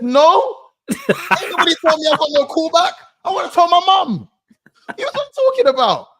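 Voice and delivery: outraged shout. Retelling a phone call about a missed audition callback, mock-outraged shout. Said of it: "I didn't shout down the phone to them like that".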